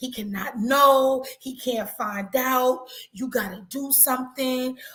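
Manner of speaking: crying while talking quietly to herself. Retelling a client in a consultation: imitating crying woman muttering to herself. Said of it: "she's literally muttering to herself".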